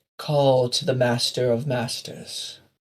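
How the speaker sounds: slow put-on evil voice. After someone asks about masters, the reply comes in the elemental evil voice. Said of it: "The elemental evil voice blows in on the wind".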